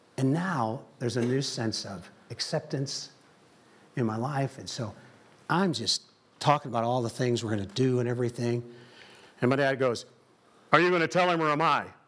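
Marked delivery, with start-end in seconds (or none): 10.7-11.9 loud, steady single-volume delivery, no shifts. Retelling what his dad said at the table: imitating his dad's one-volume voice. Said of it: "really close, uh, representation of how my dad talked".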